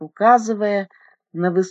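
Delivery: plain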